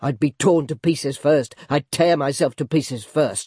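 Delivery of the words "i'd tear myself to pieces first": ordinary delivery, nothing marked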